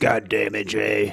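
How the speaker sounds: very low, slow, gruff growl. Imitating the boss Mister Phillips, who just talks like this: gruff Mister Phillips voice. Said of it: "he's just really gruff".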